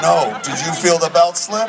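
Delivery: normal talking voice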